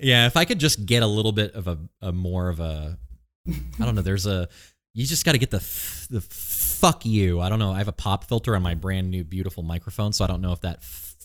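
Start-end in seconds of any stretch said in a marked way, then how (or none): 6.1-7.4 harsh, punchy, aggressive, forceful delivery. Redoing a joking retort to the other speaker: aggressive. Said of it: "That was aggressive".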